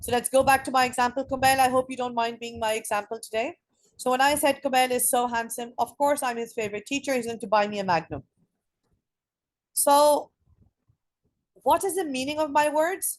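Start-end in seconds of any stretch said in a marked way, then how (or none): none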